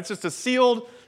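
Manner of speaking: stress on sealed. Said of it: "emphasis on sealed".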